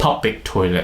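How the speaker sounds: public stressed, toilet in level tone. Pronunciation lesson on a noun phrase, stress on public, toilet flat. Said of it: "we stress on public, not the toilet. We'll make the word toilet become like a flat tone".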